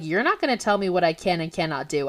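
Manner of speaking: plain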